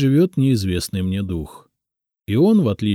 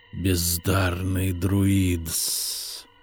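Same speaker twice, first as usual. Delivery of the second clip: hissed, snake-like serpent voice; 6 dB quieter than usual. Narrator reads a guardian serpent spirit addressing the narrator, hissing. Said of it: "прошипел он".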